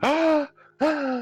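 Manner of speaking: mock baby-like gasping.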